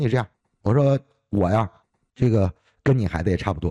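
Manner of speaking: ordinary talk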